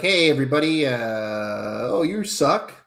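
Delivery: very slow, stretched mocking host voice, long "oh". Mocking the other speaker's hosting style: imitating James. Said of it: "Is that supposed to be my impersonation?".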